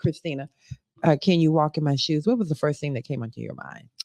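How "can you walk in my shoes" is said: ordinary talk, nothing marked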